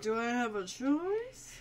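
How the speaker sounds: slow, soft, resigned put-on guy voice. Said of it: "And he's like".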